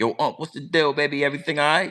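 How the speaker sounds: put-on innocent, light tone. Retelling answering his uncle's call, feigning not knowing anything. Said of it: "I'm answering the phone like I don't know nothing".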